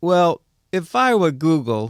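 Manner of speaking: put-on New York Brooklyn-style accent. Retelling what a wealthy New Yorker said, imitating a Brooklyn accent. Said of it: "try to imitate an accent".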